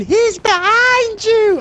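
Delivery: mock panicked scream, high and slow.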